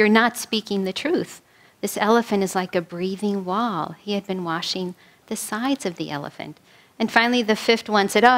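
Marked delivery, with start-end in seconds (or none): none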